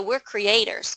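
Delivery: plain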